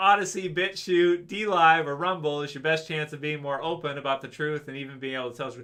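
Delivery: plain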